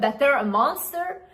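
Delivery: normal talking voice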